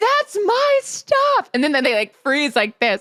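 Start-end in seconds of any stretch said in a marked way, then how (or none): 0.0-1.5 very high screaming call. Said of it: "I'm screaming out the window".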